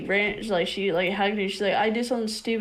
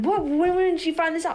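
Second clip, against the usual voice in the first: play-acted, frantic, high, panicked voice; 8 semitones higher than usual. Retelling how the stepmom reacted to the news: imitating someone panicking. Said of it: "She started panicking".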